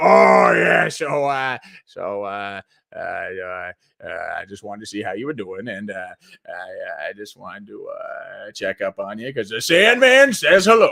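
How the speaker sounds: low, gravelly, rambling voice. Showing the voice that Adam Sandler has as he's gotten older: gravelly older Adam Sandler voice. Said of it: "the gravel in his voice".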